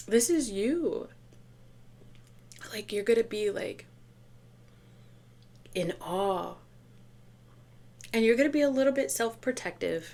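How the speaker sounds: choked-up, teary, on the verge of crying. Giving advice to the listener, the speaker says she feels close to tears. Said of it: "I feel like I'm gonna cry".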